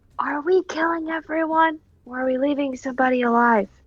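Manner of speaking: audible, high-pitched stage whisper. Player whispers to another character during a tabletop game, stage whisper. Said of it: "like stage whisper to Octavius".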